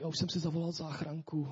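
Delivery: fake weak little cough. Retelling what a man with a cold said from the couch, mimicking a sickly little cough. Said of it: "A jenom s tím kašlíkem prostě říká".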